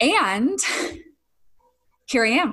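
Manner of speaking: slightly out of breath. A podcast host opening the episode after running up and down stairs, a little out of breath. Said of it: "I'm a little out of breath".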